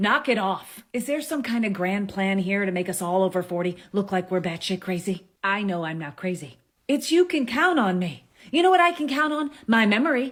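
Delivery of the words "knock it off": scolding, telling-off mom voice. Ranting about changes to iconic things, the speaker uses a mom voice. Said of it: "In my best mom voice".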